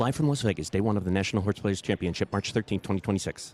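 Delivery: disclaimer voice read at top speed. Doing a live-from-las-vegas line in a disclaimer voice, rattled-off disclaimer voice. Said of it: "in my disclaimer voice".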